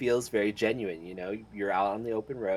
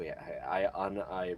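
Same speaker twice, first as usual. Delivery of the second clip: normal talking voice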